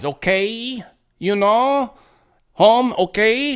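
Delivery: exaggerated Spanish accent, high, y endings stretched long. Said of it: "every word that's got a Y at the end of it's got like five Y's".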